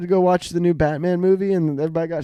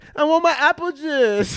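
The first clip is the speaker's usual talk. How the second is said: put-on very high, babyish toddler voice; 10 semitones higher than usual. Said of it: "she's just a baby that's grown up".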